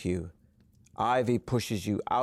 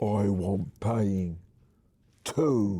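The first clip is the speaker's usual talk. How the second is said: husky character voice; 2 semitones lower than usual. Reading an interactive story, the narrator voices Ivy in a husky voice. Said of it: "says in a husky voice".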